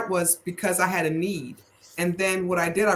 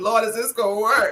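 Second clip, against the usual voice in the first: put-on tearful crying voice, pitched higher; 4 semitones higher than usual. Retelling driving home at night praying to god: retelling a tearful prayer. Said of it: "And I am crying, crying like".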